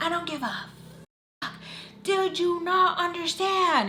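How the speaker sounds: furious yelling, pitched way up high. Retelling a woman who threw a phone at her face, mimicking her yelling. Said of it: "And I like yelling at me".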